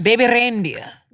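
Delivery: put-on loud Scottish accent, put on for show. Naming a show after another speaker brings it up: imitating a Scottish accent. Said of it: "What was that accent?".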